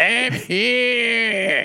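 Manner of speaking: very high, drawn-out robot voice piped through speakers. Game player voicing a robot answering its master's call, robot voice through speakers. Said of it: "why are you talking like that?".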